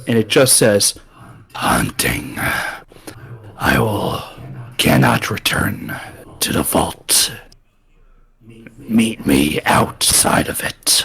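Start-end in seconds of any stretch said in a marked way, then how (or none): 1.5-11.1 very low, deep hissing growl. A summoned creature answers the one who called its true name, hissing and growling. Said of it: "it hisses and growls".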